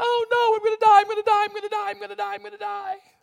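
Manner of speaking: put-on loud, very high whine like a baby. A speaker retelling a bible story acts out mock-whining like a baby. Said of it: "whining like a baby".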